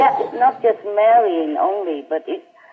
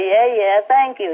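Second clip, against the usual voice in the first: mocking, disbelieving, sarcastic brush-off tone. Retelling an immigration officer's laughing reply, imitating a sarcastic thank-you. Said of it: "like, sarcastically".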